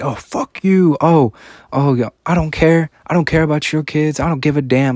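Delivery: high-pitched pretend yell. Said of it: "I'm just yelling at someone".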